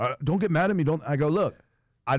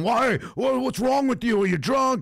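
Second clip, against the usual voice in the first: mock very high-pitched, enraged yelling; 10 semitones higher than usual. Retelling how an upset driver yelled at the other driver: imitating a man screaming. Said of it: "He's screaming, yelling".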